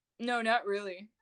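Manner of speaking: mock passive-aggressive, petty voice. Retelling an ex's words, imitating a passive-aggressive ex. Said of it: "passive aggressive".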